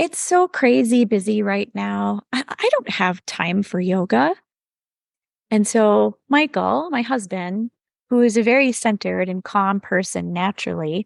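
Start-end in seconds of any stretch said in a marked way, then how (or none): 0.0-4.3 dramatic, exasperated, put-on diva whine. Retelling own reply to husband's question about yoga: imitating own diva voice. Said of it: "gave him my best diva voice".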